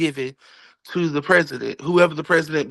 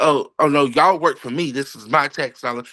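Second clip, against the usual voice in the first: put-on arrogant, belittling, snarky tone; 3 semitones lower than usual. Imitating people who say this in a snarky way: imitating snarky people. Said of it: "when they say it in a snarkly form, like".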